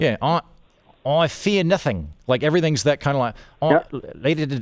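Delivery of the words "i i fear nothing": drawn-out, swooping New Zealand accent, vowels turned to i. Speaker demonstrating the accent ranked number one, Kiwi accent. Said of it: "basically like an Australian accent, except where every single vowel is an I".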